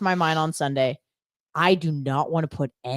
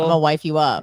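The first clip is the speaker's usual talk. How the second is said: usual speaking voice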